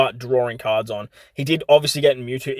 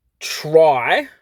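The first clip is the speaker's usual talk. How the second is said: strong punched emphasis on the word "try"; 3 semitones higher, 3 dB louder than usual. Playing a card game, the speaker plans a move, with emphasis on 'try'. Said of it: "emphasis on the word try".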